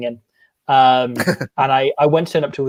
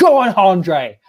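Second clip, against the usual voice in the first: urgent, loud, high-pitched cheering yell; 6 semitones higher, 5 dB louder than usual. Retelling cheering a rugby player's kick: imitating own scream at top of voice. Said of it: "I screamed at the top of my voice".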